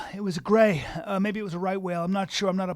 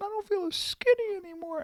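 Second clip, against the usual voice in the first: very high-pitched whale voice. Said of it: "He has that high-pitched voice?".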